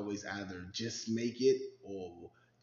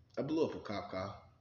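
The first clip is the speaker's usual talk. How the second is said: acted straight-faced, casual, deadpan delivery. Retelling what a date said about leaving philly: imitating a deadpan delivery. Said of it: "literally with a straight fucking face".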